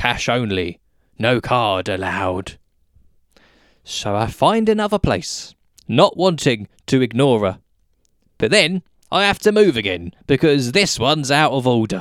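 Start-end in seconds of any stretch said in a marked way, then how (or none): 0.0-2.6 low robotic machine voice, announcement style. Telling of a trip to the self-checkouts, quoting the machine in a robotic voice. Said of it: "she says in her robotic voice".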